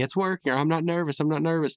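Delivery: a scream yelped at high pitch. Recounting a scene where a man spins in a bank line: retelling a scream.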